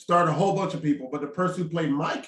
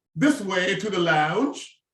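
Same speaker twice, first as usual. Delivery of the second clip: clumsy, really bad put-on British accent; 2 semitones higher than usual. Admitting a weak accent, then trying a line in a bad British accent. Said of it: "my British accent is real bad".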